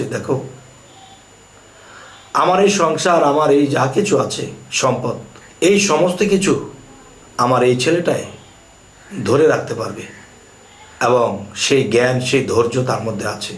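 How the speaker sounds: plain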